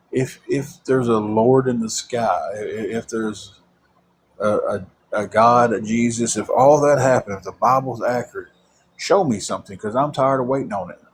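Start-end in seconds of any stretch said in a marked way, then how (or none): none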